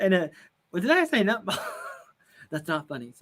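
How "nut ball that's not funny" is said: talking through laughter. Joking about mixing up a saying, laughing while talking. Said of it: "I don't know why I'm laughing".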